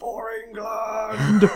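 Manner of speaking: very high, full-lunged battle-cry scream. Retelling a teammate's mid-race cry: imitating someone screaming. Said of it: "just screaming".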